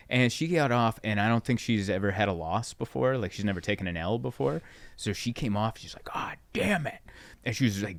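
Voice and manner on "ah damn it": play-acted, very high-pitched, frustrated, upset voice. Retelling how a young comic reacted after a rough set: imitating an upset cursing comic. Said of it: "cussing and upset".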